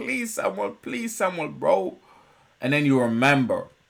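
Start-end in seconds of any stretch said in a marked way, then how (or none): 0.0-2.0 high, tearful, crying, pleading. Retelling a scene where a character begs for help: imitating a crying plea. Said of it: "And he's crying. He's begging".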